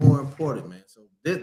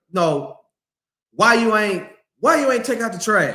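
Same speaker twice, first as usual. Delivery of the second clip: put-on pitched-up, crazy-sounding nagging complaint; 6 semitones higher than usual. Contrasting two ways of asking about the trash, imitating someone nagging. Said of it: "You start talking to me crazy".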